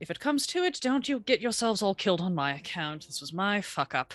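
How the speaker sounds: quiet muttering under her breath. Voicing a character speaking to nearby party members: quietly under her breath. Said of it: "kind of quietly under her breath".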